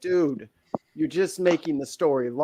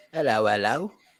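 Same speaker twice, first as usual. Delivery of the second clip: badly put-on Cockney accent, pitched lower; 5 semitones lower than usual.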